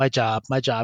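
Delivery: careless, offhand, uncaring, indifferent tone. Retelling own answer when saying what one is thankful for: imitating own uncaring answer. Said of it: "'cause I don't really care".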